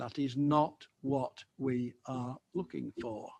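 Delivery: measured, pointed, slow and deliberate emphasis. Address all the officers present before refusing to vote in favour, slow and deliberate. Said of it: "I say that slowly and deliberately".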